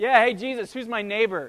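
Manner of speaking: loud, jeering, needling mocking tone. Retelling a lawyer's challenge to jesus: imitating a mocking taunt. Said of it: "basically in "Run home, little princess,"".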